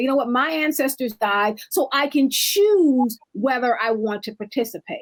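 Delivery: ordinary delivery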